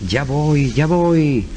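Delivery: very slow, drawn-out, odd goblin voice intonation. Retelling a story, voicing the goblin's reply to curious visitors: goblin's odd intonation. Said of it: "ella daba esa entonación que era la, la, precisamente la del duende".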